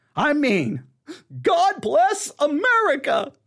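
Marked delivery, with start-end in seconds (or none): 1.4-3.3 heavily exaggerated, high, over-the-top sarcastic tone. Commenting on Southern Baptists giving Ronald Reagan: over the top sarcastic. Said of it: "I'm being way over the top sarcastic".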